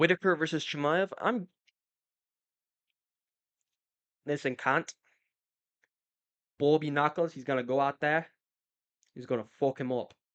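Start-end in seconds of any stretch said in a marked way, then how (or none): 1.2-10.0 iffy, put-on attempt at an Australian accent. Predicting a fight result, then slipping into a put-on Australian accent. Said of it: "I don't know if that's a good Aussie accent".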